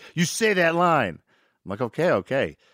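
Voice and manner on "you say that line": high-pitched, angry, pissed-off, insistent tone. Retell how he insisted that you say the line you called stupid, imitating someone pissed off. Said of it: "Then he got pissed".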